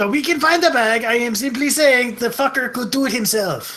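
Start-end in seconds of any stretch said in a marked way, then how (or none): 1.0-3.8 put-on French accent with a Quebecois tinge. Arguing about who should find the bag, a character speaks in a French accent. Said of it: "his French accent starting to come out".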